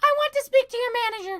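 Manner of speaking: very high, loud, shrill newborn squeal. Joking about a newborn in the hospital room, voicing the tiny baby very high-pitched. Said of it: "Very high pitched".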